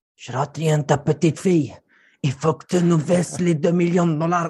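put-on voice with Mexican accent. Describing how not to pressure a customer, imitating mexican kidnappers. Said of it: "ma petite imitation des ravisseurs mexicains".

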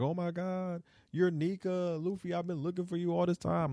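weepy, sobbing, soft, high crying voice. Retelling a scene where Bonnie talks to Luffy, imitating Bonnie crying. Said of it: "She's crying and everything".

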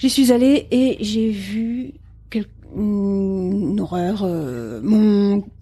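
halting, slow, hesitant, with "une" drawn out. Playing a stranded plane-crash survivor, telling the others what she saw, halting and hesitant.

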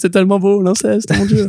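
high-pitched, tearful mock sobbing through the words. Acting out how Arnaud would react to the scene, imitating Arnaud crying. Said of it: "à applaudir des deux mains en pleurant".

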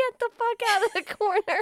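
shouting. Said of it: "It's just what you yelled".

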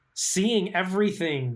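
high, slow passionate emphasis. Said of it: "the passion in your voice there".

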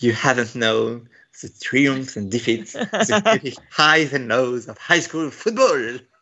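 put-on English accent layered over a French accent. French speaker quoting a Riverdale line in English: French speaker's English accent. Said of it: "prêt pour mon accent anglais".

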